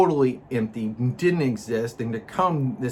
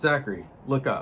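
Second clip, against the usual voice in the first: normal talking voice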